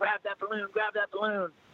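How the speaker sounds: mock very high-pitched, frantic, urgent shout. Recounting what the rider behind them shouted, retelling an urgent yell. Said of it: "he's yelling".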